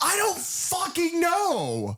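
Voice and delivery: reenacted scream. Speaker recalls screaming back at a confused character, retelling own screaming. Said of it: "and I'm sitting screaming".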